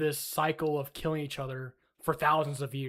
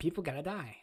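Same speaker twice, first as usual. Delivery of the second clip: mocking, caricatured put-on political commentator delivery; 6 dB quieter than usual. Mocking a commentator's views on war: Ben Shapiro voice. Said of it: "That's my Ben Shapiro voice".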